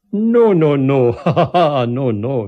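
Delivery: tremendous laugh, very loud, very slow, drawn out. A man pins the narrator to the ground with one foot, laughing. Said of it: "he laughed".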